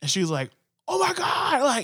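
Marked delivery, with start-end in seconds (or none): 0.9-1.6 mock shocked, freaked-out cry, very high. Retelling a daughter's reaction to a replay on TV, imitating someone freaking out. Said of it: "she's freaking out".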